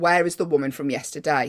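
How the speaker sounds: plain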